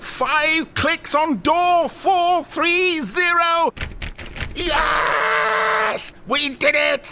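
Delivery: very high, loud triumphant cheering shout.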